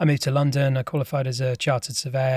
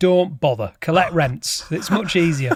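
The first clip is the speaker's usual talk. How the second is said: put-on Yorkshire accent; 3 semitones higher, 4 dB louder than usual. Recalling his dad's reply when he wanted to leave property, in a yorkshire accent. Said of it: "in his Yorkshire accent".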